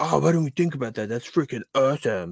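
put-on high-pitched cartoon boy voice. Imagining their own future reaction, the speaker does it in a Cartman voice. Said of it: "you sound like Cartman".

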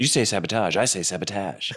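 irritated, annoyed tone. Retelling the outtake's argument with the producer: imitating William Shatner getting annoyed. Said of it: "he gets sort of pissed off".

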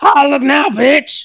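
shrill, high, loud screech. Ending her rant with one last thing, in a Courage the Cowardly Dog voice. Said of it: "Why did you sound like Curse the Cowardly Dog?".

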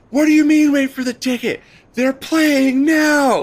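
put-on very high, shrill, loud furious scream. Recounting a woman ten feet away during the StubHub mess, retelling a woman screaming. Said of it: "she's screaming".

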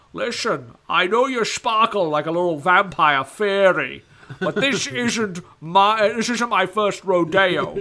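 put-on loud old butler voice. Answering a what-if, playing Sean Connery as the butler: Sean Connery impression. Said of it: "what if Sean Connery came into retirement to be Alfred".

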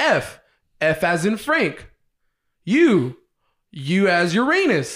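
mechanical robot voice, slow, spelled-out delivery. Retelling spelling letters aloud on the phone, imitating own robotic spelling voice. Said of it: "Did you sound like a robot like that?".

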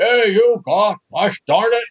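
put-on Dutch accent. Retelling what his dad called out to the umpire, imitating Joe's Dutch accent. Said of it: "in his Dutch accent".

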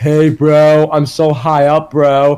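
very slow drawl, every word drawn out. Imitating Matt Riddle flying birds high above a town: Matt Riddle impression. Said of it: "Riddle flying these, like, these animated birds".

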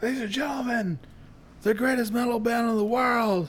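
way-up-pitched arena announcer hype-man call. Acting as the band's hype man, introducing them on stage: hype man announcing a band. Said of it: "to be our fucking Kiss hype man".

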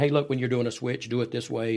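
ordinary talk

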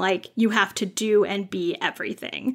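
stress on every word. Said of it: "we're saying you can do and be anything".

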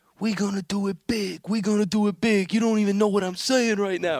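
acted-out high yelling. Retelling a YouTube video of a player going crazy, imitating a player yelling. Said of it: "Noah is yelling".

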